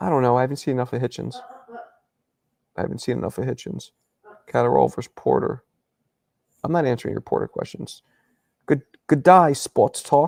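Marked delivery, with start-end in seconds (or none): 8.7-10.3 bad fake New Zealand accent, loud and slow. The speaker puts on an awful New Zealand accent for a greeting. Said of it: "that's an awful, awful New Zealand accent".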